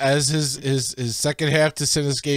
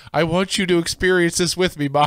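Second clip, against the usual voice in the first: ordinary talk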